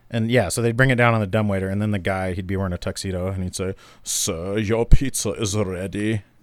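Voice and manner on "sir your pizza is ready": put-on Austrian accent, very slow and drawn out. Retelling what the guy said when the pizza came down: put-on accent. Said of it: "I don't know what that accent was".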